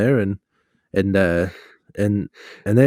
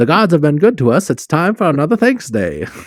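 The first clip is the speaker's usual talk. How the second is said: put-on high, old-timey 1920s street-corner newsboy voice; 7 semitones higher than usual. Riffing on an old-time newspaper bit, announcing in a newsy voice. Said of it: "newsy voice".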